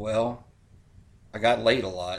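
put-on frail old-man voice, low and soft. Retelling Burt Reynolds' answer to a question, the speaker does his old, frail voice. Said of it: "he said in an old man, frail voice".

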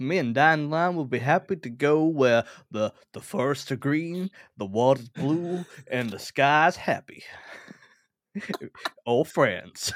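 put-on wealthy American accent. Asked where in Europe they would like to go, a character answers: wealthy American accent. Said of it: "I'm going to try and be a wealthy American".

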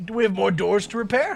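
put-on low old-woman voice. Asking the group about more doors to repair: imitating the old woman. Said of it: "Talking like the old woman now".

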